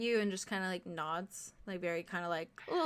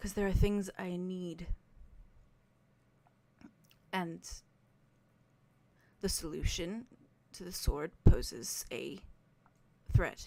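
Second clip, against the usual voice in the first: very soft voice, speaking softly. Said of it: "and just very softly says".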